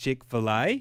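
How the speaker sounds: Australian accent. Imagining someone at a food court saying Chick-fil-A: Australian accent. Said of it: "somebody saying Chick-fil-A in an Australian accent".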